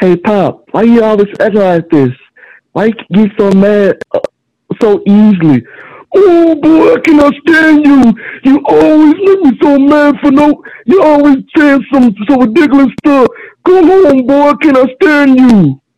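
high, swooping cartoon voice. Speaker performs one of his own cartoon characters: Will's cartoon voice. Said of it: "he always said like this".

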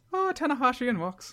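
put-on Irish accent. Redoing an earlier mocking imitation of the other speaker: vague mocking Irish accent. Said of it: "You did a vague one mocking me".

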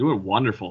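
sarcastic tone. Answering the host asking how everyone is tonight: sarcastic. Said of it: "You hit the sarcasm in my voice?".

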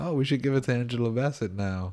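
mock sarcasm dressed up as sincerity. Imitating people deciding who gets an award: imitating someone sarcastically. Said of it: "that's sarcasm".

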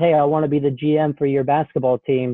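ordinary delivery

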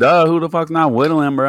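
high, mocking, obvious duh tone. Playing a whittler asked what he's doing, in a duh, you-should-know tone. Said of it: "As if like, duh, you should know".

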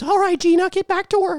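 squeaked out very high. Acting out Mister Mouse scolding Gina: Mister Mouse voice. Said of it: "Mister Mouse".

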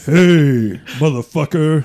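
deepest scary dog voice. Voicing a small dog with the deepest, scariest voice. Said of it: "the deepest, like, scariest voice".

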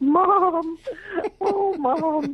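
mock very high sobbing, "mom" stretched long. Retelling how a client reacted to the message: imitating someone crying. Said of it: "the woman burst into tears and went".

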